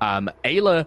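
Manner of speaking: plain reading voice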